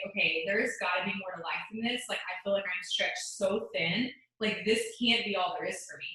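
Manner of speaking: ordinary talk, nothing marked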